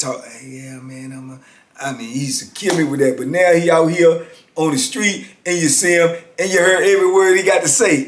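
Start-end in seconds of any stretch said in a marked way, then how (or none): 0.2-1.4 slow, very quiet, hushed stage whisper. Retelling a friend who half-whispers at the table: imitating a friend half-whispering. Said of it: "he's still whispering".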